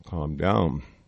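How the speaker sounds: soothing, settling voice. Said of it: "Damn it, I'm yelling".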